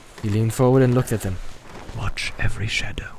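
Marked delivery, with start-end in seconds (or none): 2.0-3.2 low, breathy, hushed whispered murmur. Narrating a man warning two companions, speaking in a low voice. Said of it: "he said in a low voice".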